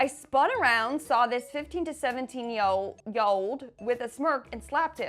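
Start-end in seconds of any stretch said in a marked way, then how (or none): none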